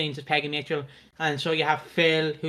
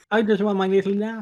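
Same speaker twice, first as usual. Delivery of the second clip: bewildered dog voice, higher pitch; 5 semitones higher than usual. Voicing the thoughts of a puppy that looks confused: voicing a confused dog. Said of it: "Why does he look so confused?".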